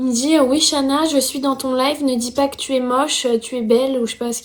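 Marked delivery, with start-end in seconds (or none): 0.4-4.0 strange, unsettling, scary-sounding voice. Retelling an anonymous phone call from a boy: imitating a caller's weird voice. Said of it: "mais avec une voix bizarre".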